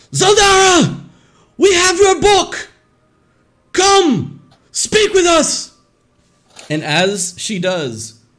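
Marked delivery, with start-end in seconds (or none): 0.1-5.7 very loud, very high screaming cry. Narrating a scene, a woman grabs the book and calls out, screaming out. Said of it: "she screams out".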